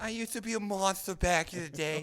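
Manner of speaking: put-on grandma voice.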